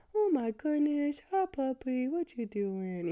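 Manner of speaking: high, slow, doting voice, drawn out and affectionate. Explaining how everyone greets a dog, then demonstrating it: talking-to-a-dog voice. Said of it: "like that dog voice is coming out".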